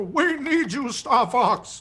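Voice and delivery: very slow drawn-out voice. Imitating a game character's line: General Pepper impression. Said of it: "That's a really good impression".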